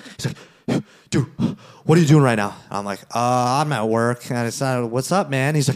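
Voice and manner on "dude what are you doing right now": alarmed, urgent, panicky voice. Retelling an unexpected workday phone call, the speaker imitates the caller's panicked voice. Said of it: "there's panic in his voice".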